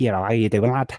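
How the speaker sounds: put-on fast, rattled-off Liverpool Scouse accent. Showing how people in liverpool speak: fast liverpool accent. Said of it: "in Liverpool, they talk like this".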